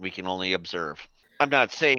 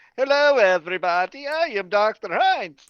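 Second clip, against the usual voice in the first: very high, loud cartoonish voice; 13 semitones higher, 6 dB louder than usual. Voicing Doctor Heinz greeting the crew: Simpsons-like Doctor Heinz voice. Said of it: "He's a Simpsons character".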